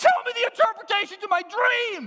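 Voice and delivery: high-pitched, loud shouting voice. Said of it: "and he goes".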